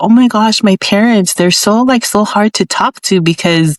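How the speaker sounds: ordinary talk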